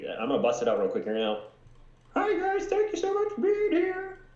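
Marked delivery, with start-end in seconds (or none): 2.1-4.1 very high, terrible put-on puppet-frog voice. A performer brings out a puppet for the audience, doing the worst Kermit impression. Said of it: "the worst Kermit impression".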